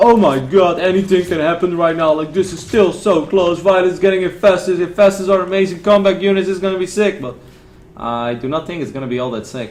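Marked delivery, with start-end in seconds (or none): 0.0-7.2 high, loud mock hype shout. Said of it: "shout into the microphone and be like".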